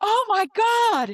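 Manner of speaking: very high, shrill, loud all-out shriek. Acting out a distraction for the others, screaming at the top of voice. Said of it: "And scream".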